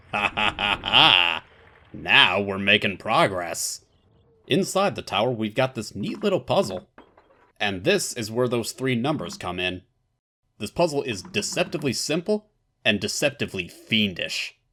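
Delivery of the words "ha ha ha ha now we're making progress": satisfied, pleased laugh, slower. Player enters the time in the clock tower and hits the button, satisfied laugh. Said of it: "(Satisfied laugh)".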